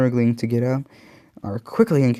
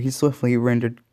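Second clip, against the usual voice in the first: ordinary delivery, nothing marked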